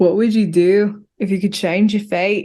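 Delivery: put-on trying for a Scottish accent. Speaker quoting a line from Brave while practising an accent; attempted Scottish accent. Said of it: "I'm trying to perfect my Scottish accent".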